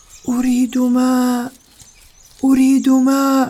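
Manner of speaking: weak, faint voice. Narrator reading a children's story, voicing what Sara hears: a faint voice. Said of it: "صوتا خافتا يقول".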